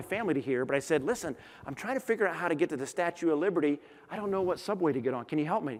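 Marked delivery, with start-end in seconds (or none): 1.0-5.8 hushed, private half-whisper. Retelling asking a stranger for subway help so his family won't hear, retelling a half-whisper. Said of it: "I whispered back at him".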